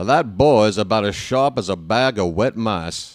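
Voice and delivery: southern-style cartoon rooster voice. Speaker tries to talk like a cartoon character, Foghorn Leghorn voice. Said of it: "if I talk like Foghorn Leghorn".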